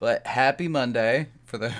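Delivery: heavy, laid-on-thick, dripping sarcasm. Greeting everybody after a stuck microphone, heavily sarcastic. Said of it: "Say that as sarcastically as I can".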